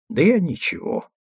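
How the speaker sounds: placating, conciliatory mutter, pitched a touch up. Andreev answers a colleague's objection about something new; conciliatory mutter. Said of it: "примирительно буркнул Андреев".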